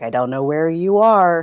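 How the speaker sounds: hesitant, indistinct mumbling under breath. A player's character trying to get the group past, mumbling under breath. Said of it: "mumble that under my breath".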